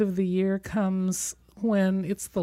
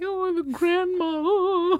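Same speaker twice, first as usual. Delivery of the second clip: very high, very slow, drawn-out tearful sob; 11 semitones higher, 4 dB louder than usual. Recalling watching a film on a plane, retelling own weeping. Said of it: "weeping and going like".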